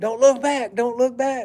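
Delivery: hollering, loud and high. Retelling a woman hollering as he backs out the car, imitating hollering. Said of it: "she's just hollering".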